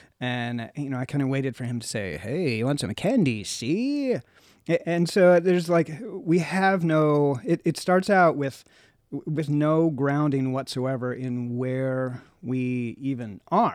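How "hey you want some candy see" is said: put-on old-fashioned New York accent. Imagining a line from a movie candy seller: 1920s New Yorker accent. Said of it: "half nineteen twenties New Yorker".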